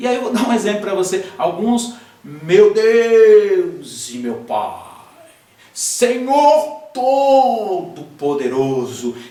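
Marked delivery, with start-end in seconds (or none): 2.2-9.1 very slow theatrical put-on voice, Deus stretched out. Giving an example of a woman who seems to enter a character, changed theatrical character voice. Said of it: "ela muda, ela parece que ela entra num personagem".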